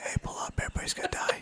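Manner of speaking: put-on alarmed whisper. Imitating a cockpit alarm that is too soft to hear: whispered warning. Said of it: "It's like whispering it".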